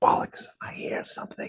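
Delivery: whispered voice. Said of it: "I'm whispering to my friends".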